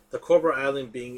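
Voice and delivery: ordinary talk, nothing marked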